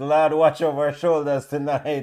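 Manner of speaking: ordinary talk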